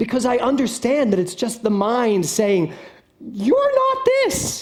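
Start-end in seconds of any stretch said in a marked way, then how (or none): 3.2-4.6 very high-pitched, tiny inner voice. Quoting what the mind says to the speaker: high-pitched voice. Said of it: "in that high-pitched voice it always speaks to me in".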